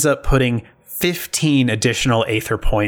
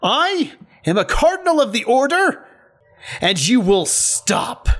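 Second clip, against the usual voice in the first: shrill, very high character yell; 12 semitones higher than usual. A narrator voices a cardinal of the order yelling at you: yelling in character. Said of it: "And he yells at you".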